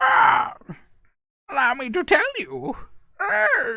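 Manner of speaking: very high-pitched, shrill, annoying pterodactyl-like screech. Demonstrating a voice for an annoying character, like a constipated pterodactyl. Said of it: "sounded like a fucking constipated pterodactyl".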